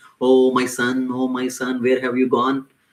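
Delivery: mock crying, lamenting and put-on. Telling a story, acting out a father over his dead child, imitating someone crying. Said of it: "started crying".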